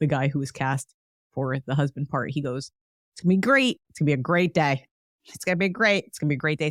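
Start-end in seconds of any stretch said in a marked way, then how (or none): 3.1-6.7 heavily sarcastic, dripping, put-on optimistic tone. Act out the husband with construction going on outside the window, imitating a really sarcastic fella. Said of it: "he played a really sarcastic fella".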